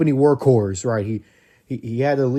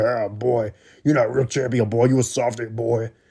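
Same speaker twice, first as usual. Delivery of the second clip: raspy, taunting old voice, mocking in tone. Recounting Jake Roberts cutting down Hangman on the mic: Jake Roberts raspy old voice. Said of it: "Jake Roberts' old raspy ass voice was like".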